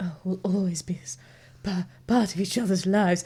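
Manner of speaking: mock sexy, sultry voice. Acting out how someone might say a romantic line: mock sexy voice. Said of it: "was that your sexy voice?".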